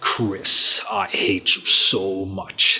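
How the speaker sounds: low, regal, menacing villain voice. Recalling the video game, the speaker quotes its villain in a royal villainish Albert Wesker voice. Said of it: "Albert Wesker has a more royal villainish voice".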